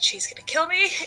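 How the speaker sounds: muttered under breath. Voicing a character about to touch a mirror, muttering under breath. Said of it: "She just mutters under her breath".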